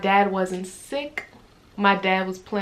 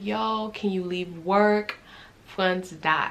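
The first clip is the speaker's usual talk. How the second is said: mock tearful words coming through sobs. Retelling asking a fiance to leave work: retelling own past crying. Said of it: "I'm crying on the phone".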